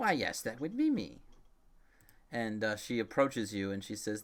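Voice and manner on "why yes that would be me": put-on crackling, high old woman voice. Voicing the seller of healing potions, replying to the group, crackling old woman voice. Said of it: "the crackling uh, voice of an older woman".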